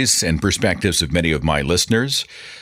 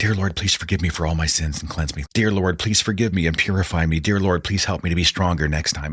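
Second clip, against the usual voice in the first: whispered. Retelling own childhood prayers said under the breath: imitating own past whisper. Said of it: "under my breath kind of whispering".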